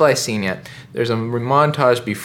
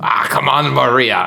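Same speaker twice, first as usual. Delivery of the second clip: bad, failed put-on Soviet accent. Quoting a Soviet character from a funeral scene, in a bad Soviet accent. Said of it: "I can't do a Soviet accent".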